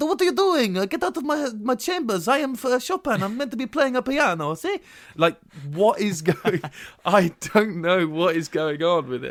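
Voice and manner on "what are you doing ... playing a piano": put-on Italian accent, pitched very high. Retelling a film scene with an actor playing Chopin: Hugh Grant's Italian accent. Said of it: "Hugh Grant does an Italian accent".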